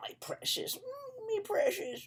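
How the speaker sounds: very high-pitched creature-like voice. Speaker describing your inferior self, doing a Smeagol voice. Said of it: "Your inferior self is like Smeagol".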